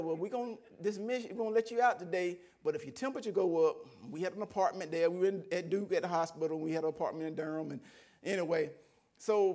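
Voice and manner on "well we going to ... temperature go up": ordinary talk, nothing marked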